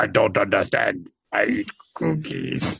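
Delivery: low, slow, creaky voice, dragged out. Doing a joke impression of Odo eating cookies: imitating Odo. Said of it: "This is my favorite voice".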